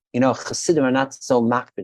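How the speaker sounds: normal talking voice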